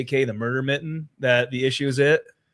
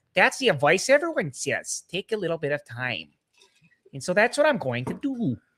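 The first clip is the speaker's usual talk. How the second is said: laid-on, sing-song fake Midwestern accent; 3 semitones higher, 5 dB quieter than usual. Imitating her statement to the others: fake Midwestern accent. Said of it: "I'll put on her fake, uh, Midwestern accent".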